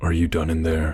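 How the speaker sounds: normal talking voice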